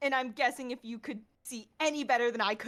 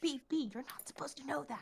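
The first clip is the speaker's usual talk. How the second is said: very quiet, hushed whisper pulled in close; 2 semitones higher, 10 dB quieter than usual. Voicing Iris pulling B close to speak: whispering as Iris. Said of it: "pulls her real close and whispers".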